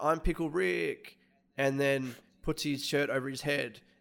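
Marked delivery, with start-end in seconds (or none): 0.0-1.2 mild, half-shouted yell. Retelling a video of a guy at a counter: imitating someone yelling. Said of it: "he yells out".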